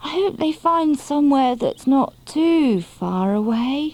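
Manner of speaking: drowsy, half-asleep, slightly high voice. Narrator reads a character talking about hibernating with the others, sleepy voice. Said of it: "came a sleepy voice".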